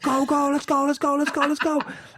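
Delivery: mock urgent scream, very high and loud. Retelling a man pushing her at an easy effort level: imitating screaming go at her. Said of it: "he's like screaming at her".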